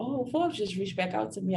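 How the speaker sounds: calm voice with no excitement.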